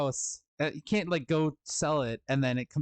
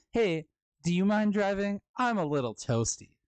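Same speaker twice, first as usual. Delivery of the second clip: commercial-style delivery, higher pitch; 5 semitones higher than usual. Retelling a line from a commercial against driving high: imitating the woman in the commercial. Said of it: "That's exactly how she said that line".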